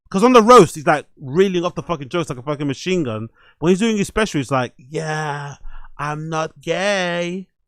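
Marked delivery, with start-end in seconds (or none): 4.8-7.5 very slow, quiet, pausing, stretched-out cadence. Mimicking how a comedian talks in his special, imitating a way slower cadence. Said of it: "He talks with a way slower cadence".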